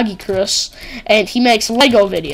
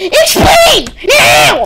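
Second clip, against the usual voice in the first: very high, shrill, furious rage scream; 14 semitones higher, 7 dB louder than usual. Recounting a man who raged and shut down his server, imitating him screaming. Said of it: "he just screams".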